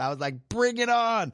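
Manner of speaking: high, defiant, daring cry. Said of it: "straight up Lieutenant Dan".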